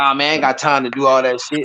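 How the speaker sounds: ordinary talk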